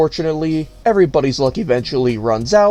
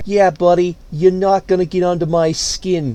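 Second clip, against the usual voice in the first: put-on Boston local accent. Reenacting an argument over someone's name and badge number, put-on Boston accent. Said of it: "I had to cut that Boston accent short".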